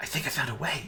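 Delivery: shy, timid, hushed half-whisper. A character among monks reading books speaks to the party, timid half-whisper. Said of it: "she kind of timidly whispers to you".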